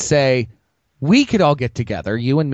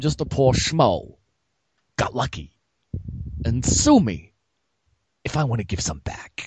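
put-on halting actor voice, quieter; 5 dB quieter than usual. Quoting a line from Batman Returns, Christopher Walken impression. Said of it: "You used to do the one from Batman".

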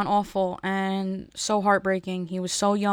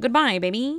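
quick put-on puppet character voice; 3 semitones higher than usual. Ending a bit about scaring people from McDonald's, in a Kermit voice. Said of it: "That didn't really sound like Kermit".

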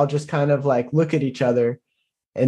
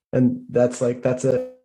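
ordinary delivery

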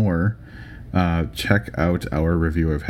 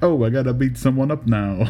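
pitched-up New York mobster wiseguy voice; 7 semitones higher than usual. Guest asked by the host to do the mob voice he does. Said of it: "make sure you do that mob voice that you do".

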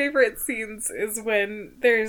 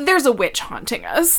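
put-on casual, unbothered, matter-of-fact tone; 4 dB louder than usual. Retelling how Rial told the inspectors about the witch: imitating Rial's nonchalant tone. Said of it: "just so nonchalant about it".

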